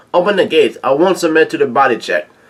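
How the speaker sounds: normal talking voice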